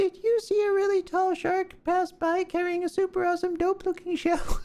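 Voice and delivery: put-on high-pitched voice for a little crab. Voicing a character addressing a crab, in a high-voiced character voice. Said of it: "I'm not really used to doing high-voiced characters".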